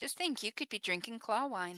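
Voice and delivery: light, playful, ribbing teasing tone. A character in a role-play talks to another character: teasing tone. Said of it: "She says this in a teasing tone".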